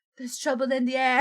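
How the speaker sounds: put-on British accent. Reading a game character's lines aloud after asking whether to: put-on British accent. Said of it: "Should I say this in a British accent".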